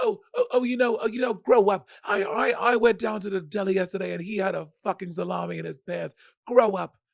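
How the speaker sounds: high, exhausted-sounding New York accent. After a guest declines to try, the speaker does a Joan Rivers impression. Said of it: "That's a pretty good Joan Rivers".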